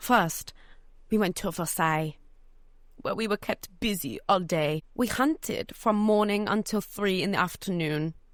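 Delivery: put-on French accent sliding into British accent. Trying a french accent on cue lines, french accent drifting into british. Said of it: "I'm just getting British as we go".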